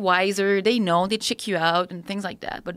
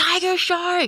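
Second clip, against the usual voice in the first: mock piercing scream, very high; 10 semitones higher, 3 dB louder than usual. Telling a shark story, retelling the scream of a friend swimming towards the boat. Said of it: "And he screams".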